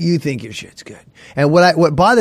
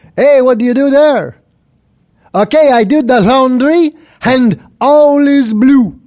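loud, high, laid-on Quebec French accent on English; 9 semitones higher, 6 dB louder than usual. Asked to show his Quebec French, a comedian speaks in a Quebec French accent. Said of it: "You want to hear my Quebec French now?".

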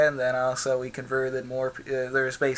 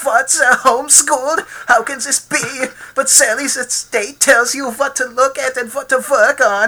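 put-on voice with a German accent; 12 semitones higher, 11 dB louder than usual. Retelling how their father reacted to homeschooling: imitating dad's German accent. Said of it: "says it all in his German accent".

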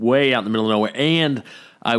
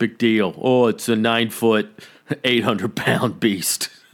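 mock tough-guy swagger, put-on bravado. Joking that one won't play it cool about seeing one: mock tough-guy bravado. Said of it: "I'm not gonna play tough guy and be like".

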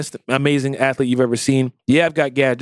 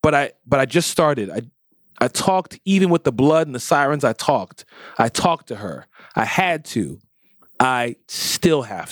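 usual speaking voice

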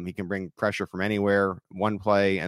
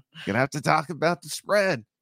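very bad announcer voice, pitched higher; 8 semitones higher than usual. Imagining a commentator during a blowout game: very bad Collinsworth impression. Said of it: "my very bad Collinsworth impression".

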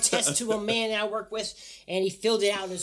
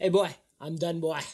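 very bad put-on fake Jamaican accent; 11 semitones lower, 17 dB quieter than usual. Telling a story about a guy who quit, in a bad Jamaican accent. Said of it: "That was god-awful terrible".

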